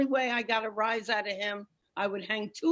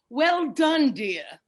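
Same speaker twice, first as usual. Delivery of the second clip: put-on raised voice with an English accent; 4 semitones higher, 7 dB louder than usual. Retelling what the husband said after making love: imitating english husband. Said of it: "he turns to me and says".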